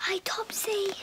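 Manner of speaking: whisper. Greeting a visitor while a baby sleeps nearby, whispering. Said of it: "Why are you whispering?".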